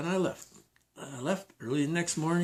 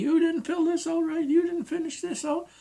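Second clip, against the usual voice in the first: shrill, very high-pitched screaming and yelling; 14 semitones higher, 4 dB louder than usual. Retelling how the manager screamed about the job application: imitating someone screaming. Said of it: "started screaming at me".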